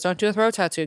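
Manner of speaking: plain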